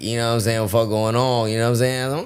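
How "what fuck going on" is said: normal talking voice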